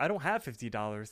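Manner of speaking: ordinary talk, nothing marked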